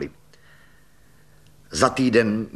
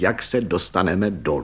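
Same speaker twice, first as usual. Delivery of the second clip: ordinary delivery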